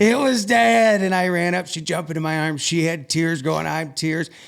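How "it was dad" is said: high, loud, slow joyful yell. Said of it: "she's yelling".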